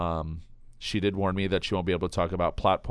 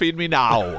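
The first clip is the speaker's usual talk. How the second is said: fake transatlantic accent, half-British half-American, pitched up; 5 semitones higher, 4 dB louder than usual. Doing a voice after a podcast ad read, in a fake half-American, half-British accent. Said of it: "That was more transcontinental".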